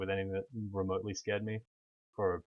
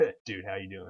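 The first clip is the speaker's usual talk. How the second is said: stock American dude voice. Showing how the bro voice sounds when talking to people: american bro voice. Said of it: "my bro voice is getting more and more American".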